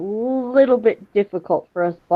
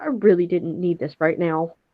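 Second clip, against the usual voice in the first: soft muttering under the breath, to herself. Voicing a character reacting to a mess: muttering under her breath. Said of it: "she just says under her breath".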